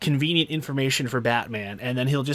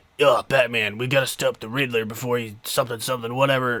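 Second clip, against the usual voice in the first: put-on gravelly, rough cop voice. Describing a film character's odd delivery, imitating Gordon's gravelly voice. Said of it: "this gravelly, like, ... kind of voice".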